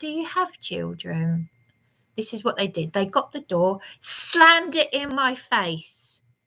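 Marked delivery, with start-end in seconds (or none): 0.0-1.5 very calm, even, soft tone. Recounting asking the police a question from a cell, retelling a very calm question. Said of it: "and I just said very calmly".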